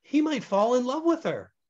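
puzzled and uncertain. A woman replies to a man about the boy, confused.

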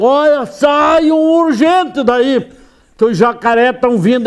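acted-out high, alarmed shout, loud and carrying. Speaker retells shouting to the people in the water: retelling a shouted warning. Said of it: "Aí eu gritei".

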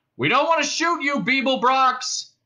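very high-pitched shouting. A figure at the end of the gangway shouts to Beeblebrox: shouted. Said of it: "shouted the figure".

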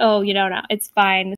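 plain

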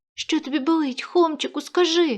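earnest, pleading, begging tone. Reading a story, the narrator voices Mykhas speaking to Khoma, begging. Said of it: "благав Михась".

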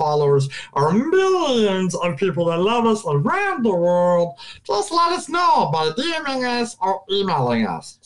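swooping sing-song character voice, pitch wildly up and down. A host addresses the show's followers in a Jar Jar Binks voice. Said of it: "we had Jar Jar Binks do a guest".

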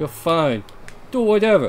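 put-on New York accent on every word. Reading a character's reply aloud, the speaker gives it a New York accent. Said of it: "That was completely New York".

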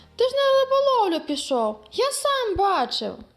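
astonished. Reading a story, the boy Yevhenko answers his father: surprised. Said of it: "здивувався Євгенко".

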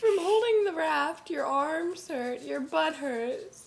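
high, loud, slow, aching moan.

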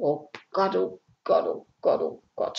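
breathy whispered moan. Narrator reads Ede after a failed break-in, groaned. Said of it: "stöhnte Ede".

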